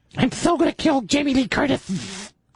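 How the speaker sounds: goofy lisping voice, very high pitched. Playing a goofy version of a masked killer, in a silly, lispy voice. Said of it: "a silly, lispy voice".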